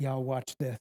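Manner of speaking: muttered under the breath. Retelling a story of five loaves and a crowd, an aside muttered under the breath. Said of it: "under his breath".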